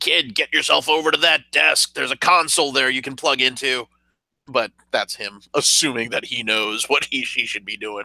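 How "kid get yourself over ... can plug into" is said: loud shout with a raised voice. Playing a character shouting an order to another character: shouting an order in character. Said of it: "I'm actually shouting at Cloudkill".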